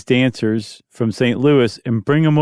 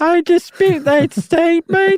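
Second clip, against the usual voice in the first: put-on British accent, much higher. Speaker imitates the Taylor Girls objecting to a claim, in a British accent. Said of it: "they would say it with a British accent".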